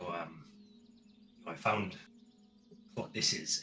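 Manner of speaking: hushed, soft, secretive conspiratorial tone. Playing a character who leans in to share a find: hushed conspiratorial voice. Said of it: "conspiratorially and with voices hushed".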